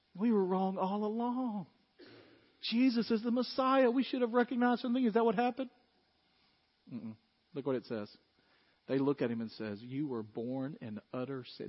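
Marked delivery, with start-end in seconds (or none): 9.8-11.7 put-on contempt, quieter and slower. Retelling what they said to him before casting him out, with mock contempt. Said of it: "Do you hear the contempt in their voice?".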